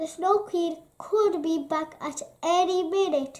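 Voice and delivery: ordinary delivery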